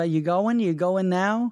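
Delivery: put-on New York accent. Imitating his wife, put-on New York accent. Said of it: "my wife has it as well".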